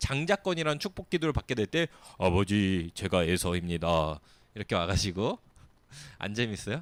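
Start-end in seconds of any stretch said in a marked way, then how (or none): 2.2-4.2 put-on deep voice, much lower and slower. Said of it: "목소리도 굵게 해서 형인 척하면서".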